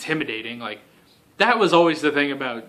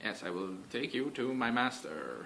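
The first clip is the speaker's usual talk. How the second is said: bad put-on voice, very quiet, low, barely above breath; 4 semitones lower, 16 dB quieter than usual. Discussing a show's villains, quoting a line in a terrible Madame Gao impression. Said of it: "that was a terrible impression".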